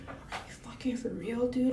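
hushed voice. Retelling what she said after moving away to be respectful, in a lowered voice. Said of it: "lowered my voice".

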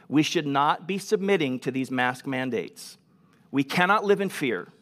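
ordinary delivery

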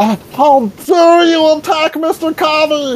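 very high, shrill, angry scream. Voicing a character who sees an ally attacked: NPC screaming. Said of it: "Riley screams".

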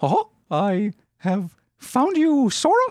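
put-on cartoon mouse voice with speech-like cadence. Retelling own past line: Mickey Mouse voice in Obama speech cadence. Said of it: "I just started talking like Mickey Mouse".

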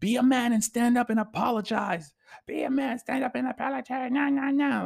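mock screaming, very high and shrill. Retelling a post where a woman screams at a man: imitating a woman screaming. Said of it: "she's just screaming in his face".

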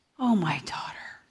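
soft, yearning, full of longing. Preaching, voicing God's call to his daughter, showing it is said yearning. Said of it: "it is said with yearning".

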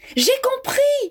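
very high-pitched, sudden exclaimed cry. A girl, after looking around, calls out to the others, exclaiming.

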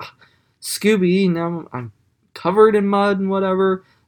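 acted, disgusted, grossed-out, high-pitched exclaiming tone. Retelling a cartoon scene where mud gets on Daphne's dress: imitating Daphne grossed out. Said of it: "she's all grossed out".

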